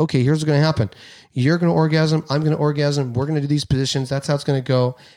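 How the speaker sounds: ordinary delivery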